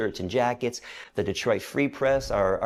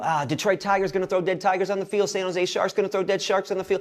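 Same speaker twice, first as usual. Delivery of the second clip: high-pitched, screaming outburst rant; 8 semitones higher than usual. Retelling calling in to a radio station: retelling his own screaming. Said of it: "I'm screaming".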